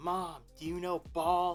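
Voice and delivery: put-on yelling. Retelling a video where the daughter calls to her mom: imitating a daughter yelling across the house. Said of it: "yelled across the house".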